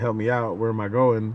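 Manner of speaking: normal talking voice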